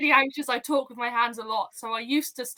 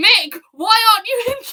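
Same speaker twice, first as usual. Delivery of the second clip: mock shouting, much higher pitch, much louder; 9 semitones higher, 10 dB louder than usual. Describing F1 race weekends at home, imitating shouting at the TV. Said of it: "I'm going to be shouting at the T V".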